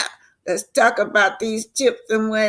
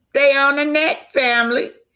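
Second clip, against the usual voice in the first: mock bright, jolly, upbeat, merry, pitched up; 7 semitones higher, 3 dB louder than usual. Retelling what someone said about a caller, mock-merry voice. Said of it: "In my merry voice".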